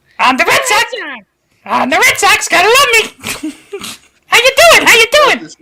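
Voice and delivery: very high, squeaky, sing-song puppet voice. Joking about starting the episode with Baby Sinclair voices; Baby Sinclair voice. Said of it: "This sounds like Elmo".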